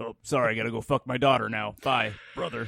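rough, creaky put-on character voice. Answering a co-host's remark on trash taste: Hulk Hogan impression. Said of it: "my spot on Hulk Hogan impersonation".

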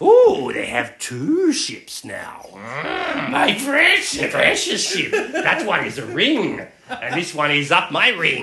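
swooping, very drawn-out, slow stretched voice. Voicing the Ferengi reacting to two ships: Gollum voice. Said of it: "I was going for Gollum there".

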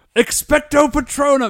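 loud yell screamed at a very high pitch. Describing people shouting a spell into their phones, the speaker is imitating someone yelling. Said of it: "yelling like".

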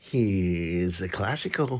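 menacing drawl with Here's stretched out. Speaker introducing a match: Jack Nicholson voice. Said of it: "in a Jack Nicholson voice, which I can't do".

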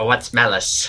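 put-on cackling old person voice. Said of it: "you just sort of hear this cackling".

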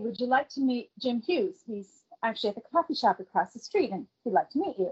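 usual speaking voice

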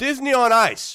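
very loud delivery. Announcing upcoming events to the other speakers: speaking really loud. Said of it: "You're being really loud".

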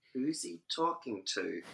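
hushed, puzzled. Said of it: "and I'm like".

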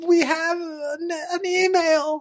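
mock desperate yearning, high, slow, pleading whine.

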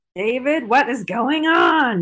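slow, annoyed tone. Quoting a character's line to a co-host: imitating Maddie's annoyed voice. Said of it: "the annoyance in her voice".

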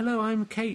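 fake girly voice, very high pitched. Recording lines nobody else wants to do, the speaker puts on a girl's voice. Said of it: "so I can put on a girl's voice".

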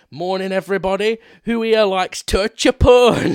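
put-on heavy Glasgow accent, very loud. Quoting the teacher opening the first lesson, thick Glaswegian accent. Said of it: "with the thickest Glaswegian accent you have ever heard".

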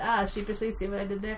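ordinary delivery

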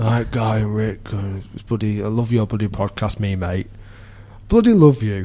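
acted-out sloppy, boozy slur, gushing. Acting out a man who'd had a few beers, imitating drunk slurring. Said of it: "a bit slurring".

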